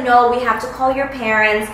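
normal talking voice

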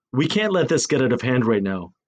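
ordinary delivery

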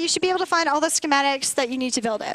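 very fast, rushed speech. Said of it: "sorry I'm talking so fast".

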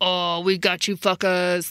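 play-acted slow, threatening, intimidating taunt. Retelling how the dynamite bombs were used: imitating an intimidating taunt. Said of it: "used as an intimidation, you know, technique to be like".

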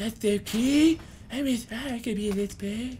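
put-on high, slow, drawn-out cartoon child voice. Talking about characters being like South Park characters, doing a South Park impression. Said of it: "That's my South Park impression".

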